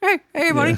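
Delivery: squeaky, very high-pitched ventriloquist puppet voice. Pointing a skull at someone and making it talk: puppeting a skull, ventriloquist voice. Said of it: "open the little mouth and just".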